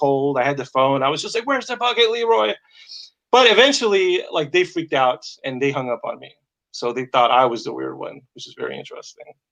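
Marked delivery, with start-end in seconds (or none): 1.5-2.5 high-pitched, heated shouting. Retelling shouting the phrase into the darkness on the phone: imitating a shout. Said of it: "I was just shouting into the darkness".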